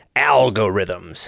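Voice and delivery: spooky, dramatic, ominous, scary delivery. Recalling when algorithms became cool to talk about: scary, ominous 'algorithms'. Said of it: "You got to say it like that, like it's really scary or something".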